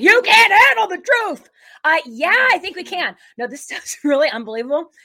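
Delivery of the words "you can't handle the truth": high, loud, belted-out bellow. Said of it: "Like in the movie".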